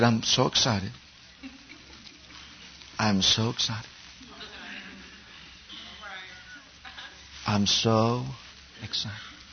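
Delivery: hushed, very soft, slow, drawn-out whisper. Retelling a radio preacher's answer: imitating a soft expressionless voice. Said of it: "just real soft, no, no expression whatsoever".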